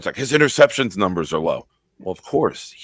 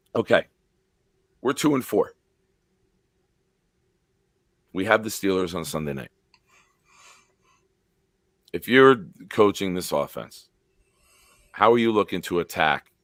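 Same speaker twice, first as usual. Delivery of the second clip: slightly hoarse voice throughout. After yelling the night before, the speaker asks a coaching question with a slightly hoarse voice. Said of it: "I do have a little bit of a hoarse voice today".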